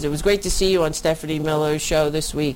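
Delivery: ordinary delivery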